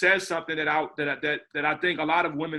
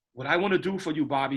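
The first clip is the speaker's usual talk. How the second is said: put-on British accent. Retelling what the film's composer told him, british accent. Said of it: "he talks in this, uh, British accent".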